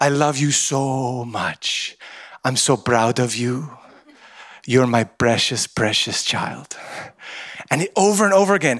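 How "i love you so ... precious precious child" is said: low, slow Egyptian accent, p sounds said as b. Quoting someone's words to an audience, in a put-on Egyptian accent. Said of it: "with the Egyptian accent".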